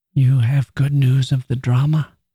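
hushed whisper. She speaks to the narrator as he bends over her; whispered. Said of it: "she whispered as I bent over her".

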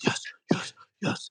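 hushed, breathy, excited whisper. A parent recalls celebrating quietly while the kids slept; whispering. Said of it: "like whispering".

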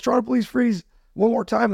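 acted-out shout. Recalling a man with a flashlight and gun confronting the speaker, retelling a yell. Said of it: "and he yells".

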